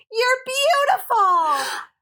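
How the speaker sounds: very high, shouted, acted out. Retelling someone rolling by in a car near the college, imitating their shout. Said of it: "just shouts".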